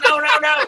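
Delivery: high, fast, frantic panicked no. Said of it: "shaking my head, like".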